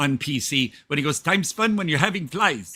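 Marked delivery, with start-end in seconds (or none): 1.2-2.8 put-on Indian accent. Quoting a line from the Short Circuit movie: Fisher Stevens Indian accent. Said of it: "in his Indi-, Indian accent".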